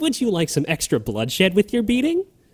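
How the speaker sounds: put-on delighted voice, very high, sing-song. Quoting a bounty hunter character's voice line, imitating a delightful voice. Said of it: "she says it in a very delightful voice".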